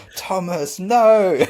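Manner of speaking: very high, shrill shout. Retelling how Moyes shouted at a player chasing the ball; imitating Moyes shouting. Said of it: "Moyes would be shouting at him".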